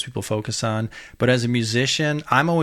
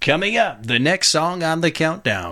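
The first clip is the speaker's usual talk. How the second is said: horrible put-on radio announcer voice, pitched up; 5 semitones higher than usual. Talking about the radio countdown, a bad Casey Kasem impression. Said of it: "I just did my horrible impersonation of Casey Kasem".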